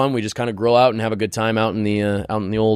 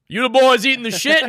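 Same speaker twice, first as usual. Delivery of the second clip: high, shrill, made-up put-on janitor accent; 3 dB louder than usual. Coming in as the janitor to the boys, in a janitor accent. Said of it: "what accent was that?".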